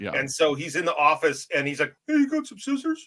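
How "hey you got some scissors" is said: pitched way up like a cartoon mouse. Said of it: "is that your [name] impression? ... [name]'s like Mickey Mouse".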